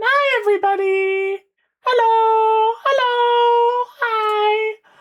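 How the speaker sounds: very slow, high-pitched, stretched-out, drawn-out delivery. Greeting everybody at the start, talking high. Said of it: "I don't know why I'm talking so high".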